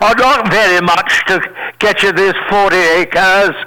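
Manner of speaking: put-on English accent in character voice. Retelling selling a property to a little guy while putting on an english accent. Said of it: "I had an English accent".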